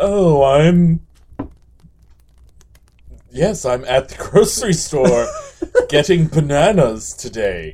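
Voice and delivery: very slow speech, every word drawn out. Imagining following Tim Gunn around for a podcast: Tim Gunn impression. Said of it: "That's kind of how Tim Gunn talks".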